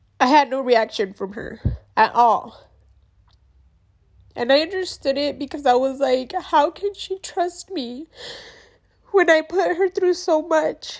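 weeping, tearful voice. Apologizing to viewers for crying, the speaker keeps telling her story, crying. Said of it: "I'm so sorry, guys, that I'm crying".

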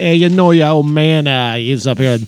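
put-on Boston accent. Telling someone his old man worked at a video store, Boston accent. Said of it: "Out the Boston accent on us".

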